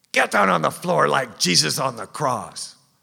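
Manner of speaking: furious, loud, high-pitched scream. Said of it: "he screams".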